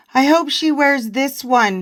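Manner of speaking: ordinary talk, nothing marked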